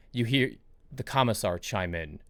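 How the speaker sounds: normal talking voice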